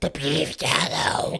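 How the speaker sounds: rough, creaky, croaking goblin-like voice. Mocking a public figure's love of beef tallow: goblin-like RFK Jr. impression. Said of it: "He's like a fucking goblin".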